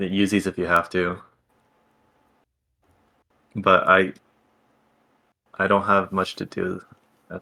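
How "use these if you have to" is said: usual speaking voice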